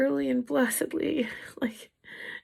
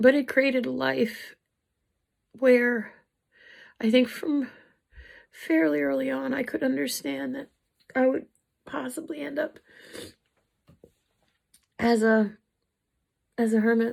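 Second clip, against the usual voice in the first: halting, choked-up voice near tears. Speaking about their own life, the speaker is choking up, near tears. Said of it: "I'm gonna cry again".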